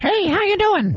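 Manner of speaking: very high, silly, weird cartoon character voice. Co-hosts joke about turning themselves into cartoons; weird cartoon voice. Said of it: "I'm just going to put on a weird cartoon voice".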